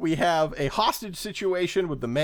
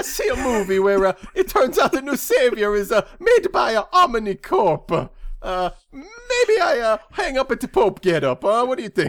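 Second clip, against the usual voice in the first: put-on Italian pope voice, much higher, louder; 6 semitones higher, 5 dB louder than usual. Doing a comedic bit, asking a companion questions, in an 80s italian pope impression. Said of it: "80s Italian Pope in this impression".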